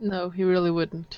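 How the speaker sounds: soft theatrical stage whisper meant to carry. Player responds to a sobbing character, in a stage whisper. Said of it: "That was like a stage whisper".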